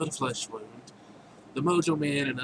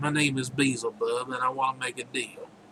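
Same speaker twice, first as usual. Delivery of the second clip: put-on pleasant Southern accent. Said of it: "you give him a nice southern accent".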